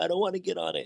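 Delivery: put-on high, frightened child's scream. Retelling a scared child at an airport escalator: imitating a screaming child. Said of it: "he was screaming, like".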